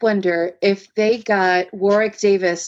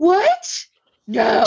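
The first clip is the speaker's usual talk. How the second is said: play-acted aghast, high, horrified gasp of disbelief; 6 semitones higher than usual. Retelling the audience's reaction when the ship went down: imitating a horrified gasp. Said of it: "a big gasp".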